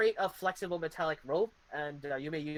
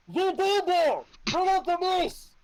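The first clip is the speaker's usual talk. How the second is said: heavily muffled voice, very high pitch and loud; 14 semitones higher, 8 dB louder than usual. Voicing an unseen enemy as a dagger is pulled back out, very muffled voice. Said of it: "you hear a very muffled".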